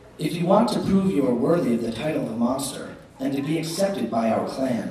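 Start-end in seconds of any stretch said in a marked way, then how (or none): none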